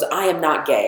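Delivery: ordinary talk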